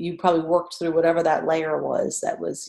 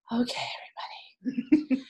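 gentle, soft, breathy yoga teacher voice; 8 semitones higher, 5 dB quieter than usual. Describing how new yoga teachers start a class, in the yoga teacher voice. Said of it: "I call it the yoga teacher voice".

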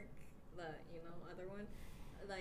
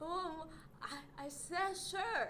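put-on bad Chinese accent, higher; 10 semitones higher, 7 dB louder than usual. Telling friends how their dad covers what he said, imitating dad's bad chinese accent. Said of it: "he has a Chinese accent".

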